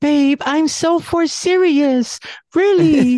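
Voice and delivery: sweet innocent cutesy voice, very high and slow. Retelling what the girlfriend said: imitating her cute innocent voice. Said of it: "she got that little cute, innocent stuff".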